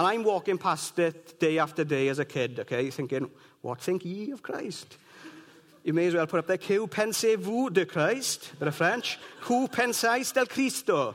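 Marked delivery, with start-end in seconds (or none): 9.5-11.1 Italian-accented Spanish, pitched up. Speaker gives a written question in other languages, Spanish with an Italian accent. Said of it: "Spanish, with an Italian accent".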